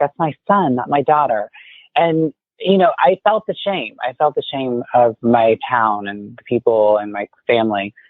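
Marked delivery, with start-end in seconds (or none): 0.0-1.5 put-on upset, correcting tone. Retelling how the mother replied when others mistook her child: imitating an upset mother. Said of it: "she would get upset and be like".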